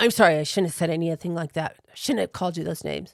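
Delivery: very gruff, loud, rushed-out delivery. Recounting how a man apologized to the speaker, imitating a gruff apology. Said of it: "It was a very gruff".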